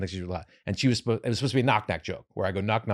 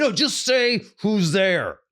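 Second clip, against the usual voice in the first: play-acted high, slow screaming; 11 semitones higher, 6 dB louder than usual. Re-enacting screaming at her on stage to just say who's there. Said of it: "I'm fucking screaming at her on stage".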